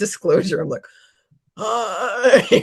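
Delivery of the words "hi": high, drawn-out voice of a tortured alien. Repeating an earlier greeting to show how it sounded: imitating a tortured alien. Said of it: "the alien that was being tortured".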